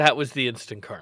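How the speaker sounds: ordinary talk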